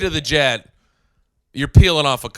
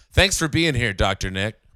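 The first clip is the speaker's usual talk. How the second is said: ordinary talk, nothing marked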